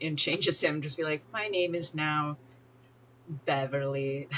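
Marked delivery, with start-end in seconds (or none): none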